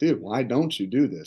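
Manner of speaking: ordinary delivery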